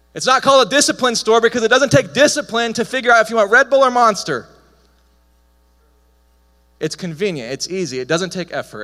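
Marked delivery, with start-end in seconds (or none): 0.2-4.5 loud, high, fired-up excited yelling. Talking to an audience about convenience stores, yelling with excitement. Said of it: "I'm sorry that I'm yelling. I'm really excited".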